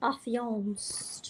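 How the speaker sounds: rough, not-good put-on cartoon voice. Setting up a camera, joking about lighting: Zazu voice. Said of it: "That's my best Zazu impression, although it's not good".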